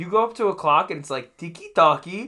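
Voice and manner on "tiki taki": cliché Swedish lilt. Naming a clock in a store, in a stereotypical Swedish accent. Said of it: "with a very, very stereotypical Swedish accent".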